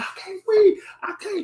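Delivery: shrill, very high screamed cry. Retelling how an officer squeezed in a crowd cried out: imitating someone screaming. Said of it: "dude on that side screaming, he said".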